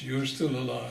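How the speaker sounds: ordinary delivery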